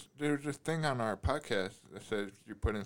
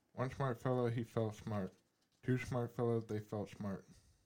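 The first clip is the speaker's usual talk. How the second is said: very fast, rapid-fire tongue-twister delivery; 9 dB quieter than usual. Reading a tongue twister aloud after being told to go as fast as possible; tongue twister read very fast. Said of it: "As fast as you can".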